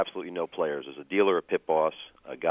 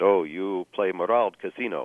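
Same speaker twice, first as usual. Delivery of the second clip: slow, rough attempted Ukrainian accent. Speaker retells what a pit manager said to him, attempted Ukrainian accent. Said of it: "Sorry about the attempt at Ukrainian accent".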